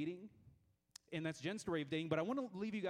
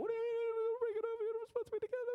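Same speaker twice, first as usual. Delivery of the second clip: very high, rattled-off, frantic panicked voice; 4 dB louder than usual. Retelling a woman announcing a breakup at her door, the speaker re-enacts freaking out. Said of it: "totally, like, freaking out".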